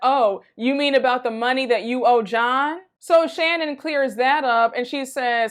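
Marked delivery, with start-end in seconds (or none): 0.0-2.8 put-on, mock-smug tone. Recapping an argument between two women, quoting one, mock-smug retelling. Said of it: "Tamra's so smug and she's like".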